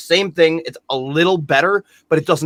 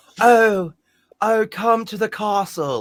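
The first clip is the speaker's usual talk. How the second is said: slow, high, drawn-out awful fake British accent; 7 semitones higher than usual. Mocking an actress's awful British accent: imitating Winona Ryder's bad British accent. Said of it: "him and Winona Ryder both doing a British accent that just sounds awful".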